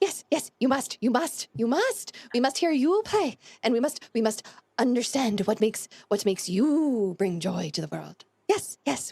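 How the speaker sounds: fast, eager, gushing, excited babbling insistence. Voicing the bat bard urging a player to come and play: excited Thald voice. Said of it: "flutters his wings at you and lifts off the air about a foot in excitement".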